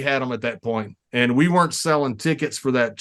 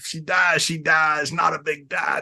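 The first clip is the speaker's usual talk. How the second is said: mock villain delivery; 2 semitones higher than usual. Retelling cutting a promo as a heel on everybody: heel wrestling promo. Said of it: "So I'm cutting a promo on everybody".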